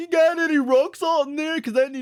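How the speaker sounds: very high, squeaky, scornful parroting voice. Retelling a scene where one man mocks another's line, in a mocking imitation of Whitey. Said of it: "Davey mocks him and goes".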